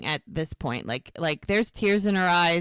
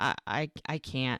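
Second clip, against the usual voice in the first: mock crying, lips quivering, quieter and lower; 5 semitones lower, 7 dB quieter than usual. Retelling how a woman reacted while being comforted, imitating someone crying. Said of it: "she's crying so much her lips quivering".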